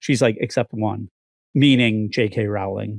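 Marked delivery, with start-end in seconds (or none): 0.4-1.1 put-on mutter, lower and quieter. Retelling what was said at an award show: Emma Watson muttering under her breath. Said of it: "almost inaudibly under her breath".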